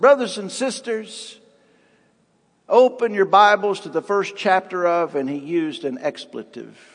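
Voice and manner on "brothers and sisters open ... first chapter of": usual speaking voice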